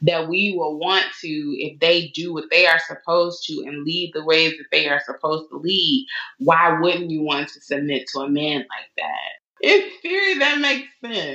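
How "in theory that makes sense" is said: laughing while talking, high, sing-song tone. Commenting on the idea of submitting to a man, laughing while talking. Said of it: "You can't even say it without laughing".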